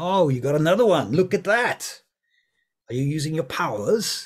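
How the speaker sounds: booming, very loud, with barely held-back frustration. Voicing a pool player who is losing and trying to hide frustration: barely hidden frustration. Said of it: "he's trying very hard not to be frustrated".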